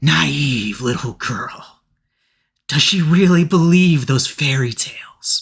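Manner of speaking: hissing voice. Narrating to Winnie, voicing an unseen speaker behind her: hissing voice. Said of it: "you hear a hissing voice".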